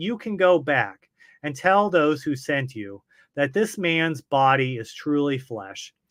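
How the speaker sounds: plain reading voice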